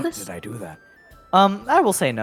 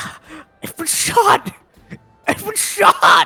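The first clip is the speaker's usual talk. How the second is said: panicked, alarmed crying out; 12 semitones higher than usual. Voicing a villager who walks out of his home. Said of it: "He goes".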